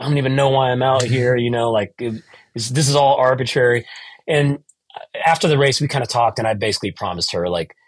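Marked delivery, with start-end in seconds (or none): 0.0-1.4 put-on tearful crying voice, higher. Retelling a call to his wife mid-race: imitating own crying.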